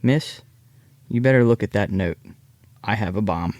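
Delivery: calm, composed, quiet low-key voice. Retelling a man leaning over to a flight attendant, in a calm, quiet voice. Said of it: "speaks in a calm, quiet voice".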